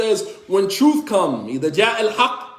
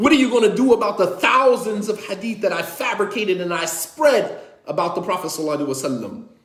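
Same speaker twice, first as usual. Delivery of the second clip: ordinary talk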